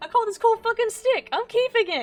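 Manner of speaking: squeaky voice way up high, very loud yelp. Retelling own words on finding a cool stick, in a high-pitched voice. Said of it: "in the high-pitched voice".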